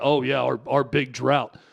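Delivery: mocking, condescending, patronizing put-on lament. Voicing what Cowboys fans don't want to hear from their organization, acting out mocking condescension. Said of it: "you mockingly, condescendingly saying".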